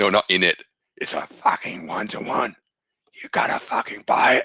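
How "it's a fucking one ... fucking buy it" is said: put-on casual delivery, Australian accent on every word. Quoting the person who taught you a technique, as Bryce Gilmore in an Australian accent. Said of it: "think Australian accent".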